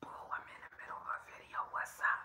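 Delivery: soft, fast unvoiced whisper, barely audible. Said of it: "I'm whispering 'cause I'm on my whisper channel".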